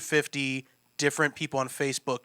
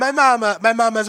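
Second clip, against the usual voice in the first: very loud, musical, pitched-up put-on Italian accent; 9 semitones higher, 9 dB louder than usual. Trying the line again with an italian accent after someone suggests it. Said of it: "what if I say it with an Italian?".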